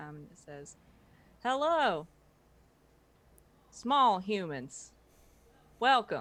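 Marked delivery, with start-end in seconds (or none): 1.4-6.2 very loud, thin, tinny robot voice. Voicing a figure greeting the small humans, tinny voice. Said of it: "this kind of tinny voice".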